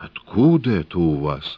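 shaking, trembling, quavering voice. Reading a story, the narrator voices Samshitov's question in a trembling voice. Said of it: "спрашивает и голос дрожит".

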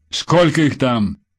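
stern, strict tone. Kulakov questions the woman pushed toward him during the attack, stern question. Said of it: "строго спросил Кулаков".

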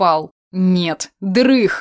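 plain

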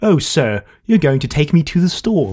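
exaggerated posh accent, high and swooping. Imitating how they always play it, in an exaggerated posh accent. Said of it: "a really posh, like".

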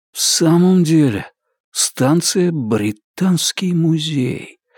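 hushed, breathy stage whisper. Richard, looking at old posters in an abandoned station, half-whispers to himself. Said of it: "прошептал он".

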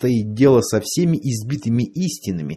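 ordinary delivery, nothing marked

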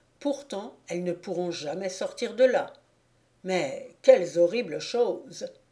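ordinary delivery

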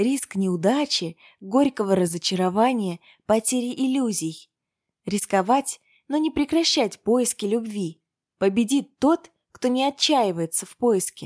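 plain

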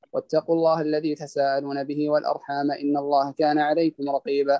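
normal talking voice

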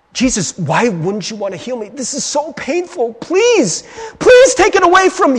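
put-on desperate begging. Acting out Paul pleading with Jesus, acting out someone begging. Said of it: "He's begging".

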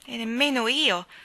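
impulsive, headlong delivery. A young man replies to a young woman; impetuously. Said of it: "disse Philip impetuosamente".

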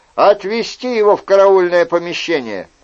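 ordinary delivery

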